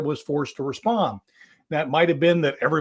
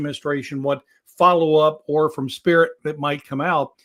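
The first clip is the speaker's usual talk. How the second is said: normal talking voice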